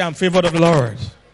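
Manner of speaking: loud, confident, sure delivery. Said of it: "Say it with confidence".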